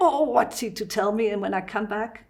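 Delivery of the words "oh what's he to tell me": ordinary talk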